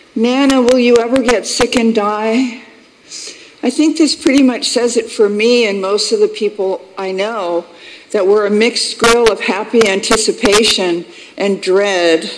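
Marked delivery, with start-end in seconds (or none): 0.2-2.7 wavering, trembling, quavering call. Speaker retells what he calls out to Nana in the night, imitating a tremulous voice. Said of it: "he calls out in a tremulous voice".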